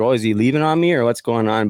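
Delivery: ordinary delivery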